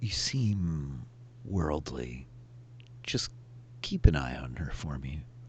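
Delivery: quiet, slow, drawn-out confiding tone. Voicing a character who leans in to a player and speaks quietly. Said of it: "says kind of quietly".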